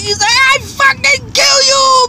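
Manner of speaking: acted high, enraged, threatening, furious scream. Retelling an angry man banging a bucket: imitating someone screaming. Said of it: "He's screaming at the top of his lungs".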